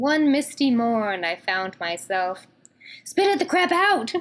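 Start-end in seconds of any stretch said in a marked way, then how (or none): 3.0-4.1 very high, shrill, roaring bellow. Narrating a second-person story as a woman character bellows at you, bellowing. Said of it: "she bellows".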